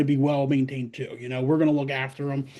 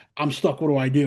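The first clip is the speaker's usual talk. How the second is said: ordinary talk, nothing marked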